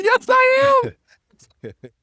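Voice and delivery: put-on loud little kid voice, very high. Replying as Fox, a kid, to the main-character jab: imitating Fox. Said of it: "It's a good impersonation".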